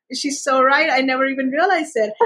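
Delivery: ordinary delivery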